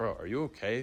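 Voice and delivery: discreet, quiet side remark. Retelling a friend's question asked during class: imitating someone speaking quietly. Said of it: "he tries to say quietly".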